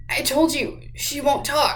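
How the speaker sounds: strangled, choked voice forcing words out. Narrator reading Luis's reply after the tall man's threat, strangled voice. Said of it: "said Luis in a strangled voice".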